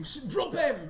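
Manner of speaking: loud, high-pitched scream.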